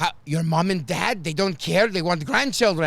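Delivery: nosy, prying tone in a woman's voice. Retelling what rideshare passengers ask: imitating a filipino passenger. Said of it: "and then they just go".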